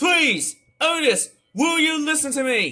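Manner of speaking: angry ranting. Ranting at a streamer named Otis over a repeated phrase: angry ranting. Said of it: "I'm sorry if I have to sound so angry".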